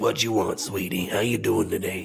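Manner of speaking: put-on crunchy-voiced grandma voice. Podcast host imitating a grandma greeting a customer: crunchy grandma voice. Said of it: "that voice is crunchy".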